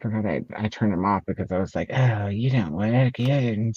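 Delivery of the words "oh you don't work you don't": put-on elderly person's voice and way of talking. Retelling talking to a device that wouldn't work: old person voice. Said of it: "That's how old people sound".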